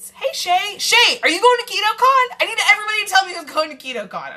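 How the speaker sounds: very high, loud, thrilled, excited sing-song calling. Calling out to shay, asking who's going to ketocon, excited and loud. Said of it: "I'm getting really excited and loud".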